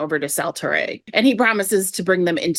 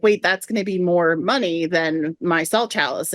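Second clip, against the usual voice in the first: plain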